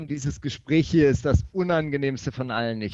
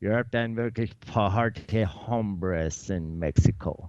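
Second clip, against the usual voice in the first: German spoken in put-on American accent; 7 semitones lower than usual. Rereading a quiz quote aloud on request: put-on American accent. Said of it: "Oder mit amerikanischem Akzent".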